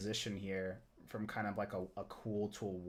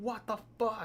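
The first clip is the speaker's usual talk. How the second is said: mock cry of agony, pitched very high; 12 semitones higher than usual. Retelling a painful procedure without anesthesia: retelling screaming in pain. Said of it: "just screaming, like, in pain".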